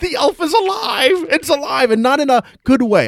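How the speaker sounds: wailing, very high, drawn-out tearful crying shriek. Retelling how she came running into the room, imitating her crying. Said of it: "she comes running in, crying".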